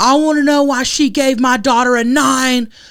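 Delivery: put-on frantic shrill voice. Retelling a parent searching for the judge after a pageant: imitating a mom freaking out. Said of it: "Like, freaking the fuck out".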